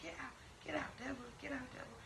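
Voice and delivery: mock hushed, relentless, very soft, high insistent yelling. Retelling how mother yelled at a three-year-old: imitating mother yelling. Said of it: "And she just won't stop".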